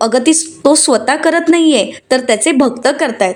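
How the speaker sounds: normal talking voice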